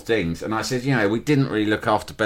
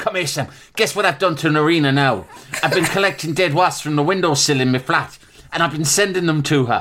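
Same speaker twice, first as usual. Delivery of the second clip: put-on Irish accent in a raised voice; 6 semitones higher, 4 dB louder than usual. Retelling how mum's friend bragged to a child: imitating Peggy's Irish accent. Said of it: "mad Irish woman from Galway".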